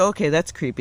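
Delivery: ordinary talk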